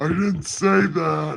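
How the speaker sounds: heavenly-sounding voice. Hosting a Bible reading, answering a line in God voice. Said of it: "in God voice".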